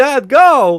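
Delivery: loud, very high-pitched voice. Retelling an actor's line that copies Walken: imitating an actor's Christopher Walken voice. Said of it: "he's trying to do his Christopher Walken".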